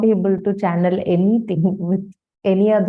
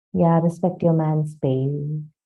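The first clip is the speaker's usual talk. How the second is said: quiet, soft-spoken, much lower voice; 4 semitones lower, 3 dB quieter than usual. Voicing what God would quietly say, speaking quietly. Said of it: "God will say it quietly".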